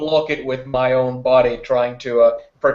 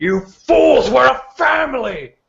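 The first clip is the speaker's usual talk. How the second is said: very high, monstrous, spat-out furious yell; 12 semitones higher, 3 dB louder than usual. A character turns to address the clan friends, yelling. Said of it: "just turning and yelling".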